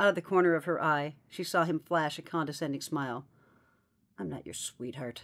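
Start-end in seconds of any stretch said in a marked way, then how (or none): 4.2-5.2 whispered, barely audible mutter under the breath. A woman at a pitching cage, to the man who called her sweetheart: muttered. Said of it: "she muttered".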